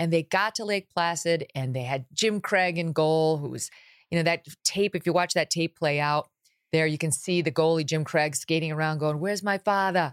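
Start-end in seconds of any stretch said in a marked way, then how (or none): 9.2-10.1 put-on Boston-accented speech. Retelling the goalie on tape skating around, in Jim Craig's Boston accent. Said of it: "with his Boston accent".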